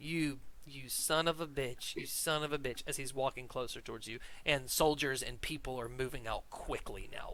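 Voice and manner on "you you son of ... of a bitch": speech broken up by laughter. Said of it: "going down the stairs laughing".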